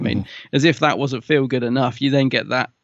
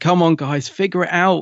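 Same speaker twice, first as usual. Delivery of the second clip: impassioned, pleading voice; 5 semitones higher than usual. Praising a scene, the speaker acts out Chris Eccleston's passionate urging. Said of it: "he's really passionate".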